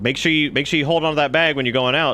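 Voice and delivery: breezy, offhand tone. Retelling a doctor's warning about a bag of samples: imitating a nonchalant doctor. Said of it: "nonchalantly is just like".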